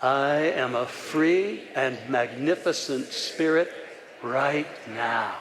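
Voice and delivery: said slowly, with heartfelt feeling. Leading a group affirmation a second time: with heartfelt feeling. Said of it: "say it with feeling to your heart".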